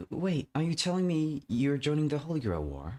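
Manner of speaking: high, stunned, shocked disbelief. Character reacting to the other's news, shocked. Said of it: "Why do you sound so shocked?".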